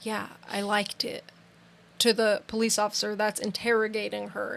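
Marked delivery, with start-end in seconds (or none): 0.0-1.2 said in a low voice. Quoting a woman answering the police officer interrogating her: low voice. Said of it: "she says in this low voice".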